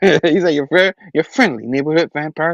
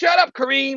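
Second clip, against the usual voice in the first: shrieking, shrill, high-pitched yell; 9 semitones higher, 5 dB quieter than usual. Retelling how he turned on Kareem, imitating someone yelling. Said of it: "he starts yelling at Kareem".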